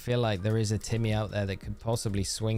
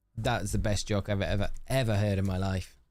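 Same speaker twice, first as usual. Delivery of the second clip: ordinary delivery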